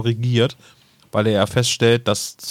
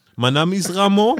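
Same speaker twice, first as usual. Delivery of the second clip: fake French accent, pitched way up high; 9 semitones higher than usual. Joking that the character's accent suddenly switches mid-play: put-on French accent. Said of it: "zu diesem, oh, französischen Akzent".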